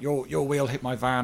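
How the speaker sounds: put-on angry man voice, mock angry tone. Retelling what an angry van owner said: imitating an angry man. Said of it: "he's very angry".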